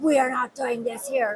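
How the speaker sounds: deep, mean voice. Retelling what he said when walking up: imitating Shannon Kelly's deep mean voice. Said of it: "his voice is deep and he's being really mean".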